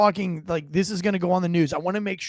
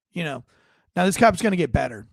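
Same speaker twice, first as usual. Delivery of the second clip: ordinary talk, nothing marked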